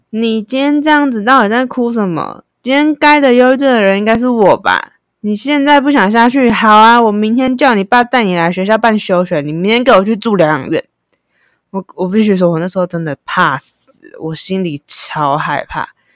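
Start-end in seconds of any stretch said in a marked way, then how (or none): 0.1-10.8 fierce, high-pitched scolding tone. Retelling how their mother scolded them after getting off the car, imitating fierce scolding. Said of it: "我妈就是这么的凶的语气跟我讲话".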